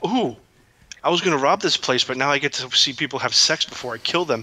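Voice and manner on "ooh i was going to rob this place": ordinary delivery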